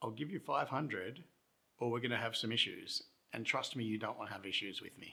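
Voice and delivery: mock controlled, calm but angry, menacing voice. Retelling confronting two people while tired, retelling a calm but angry threat. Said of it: "in a calm but angry voice".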